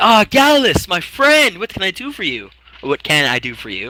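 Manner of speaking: very friendly, high, swooping tone. Voicing Severus in the game, the speaker answers Gallus: very friendly voice. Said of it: "the very friendly voice of Severus".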